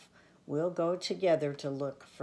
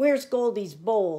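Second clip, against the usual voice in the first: very loud, high-pitched, insistent demanding tone; 6 semitones higher, 9 dB louder than usual. Franklin marches into the kitchen and asks his family, demanding. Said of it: "he demanded".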